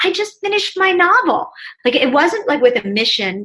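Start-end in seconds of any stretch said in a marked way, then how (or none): 0.0-1.5 bubbly, excited, exuberant burst of joy, very high. Retelling telling an acquaintance in an elevator about the novel: retelling own excited exuberant words. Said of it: "just in an excited, exuberant way".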